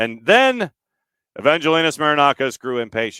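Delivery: loud, official on-air radio announcer voice. Redoing a sentence about marinakis, the speaker switches to an official radio voice. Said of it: "in official radio voice".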